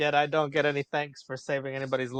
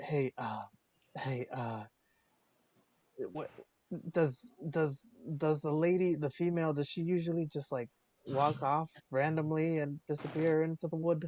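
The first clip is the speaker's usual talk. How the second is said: quiet, hushed half-whisper out of the side; 6 dB quieter than usual. Asking a companion in character about a lady who disappeared: half-whispering. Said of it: "I whisper".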